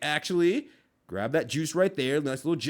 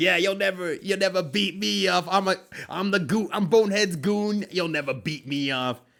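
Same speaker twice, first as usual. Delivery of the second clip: goofy toad-like voice, higher pitch; 4 semitones higher, 3 dB louder than usual. Voicing a drawn goon character taunting: half toad, half goofball voice. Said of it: "sounds like a half toad and half goofball".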